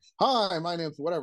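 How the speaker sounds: voice pushed outward. Showing beginner DJs how to introduce themselves when emceeing, projected voice. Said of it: "You project it out more".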